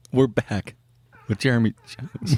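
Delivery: sad, sorrowful, mournful delivery. Announcing the return of a guest, sad. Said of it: "Why did it sound so sad?".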